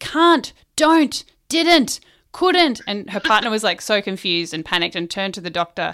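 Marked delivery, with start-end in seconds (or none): 0.0-2.8 very slow, high, loud, stretched-out yell. Telling a joke, the speaker acts out a woman in labor: imitating a woman yelling. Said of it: "She's yelling".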